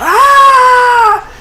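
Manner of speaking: very high, loud, anguished scream.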